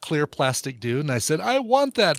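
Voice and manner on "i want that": put-on loud, high-pitched young kid voice. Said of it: "but in a much, much higher voice".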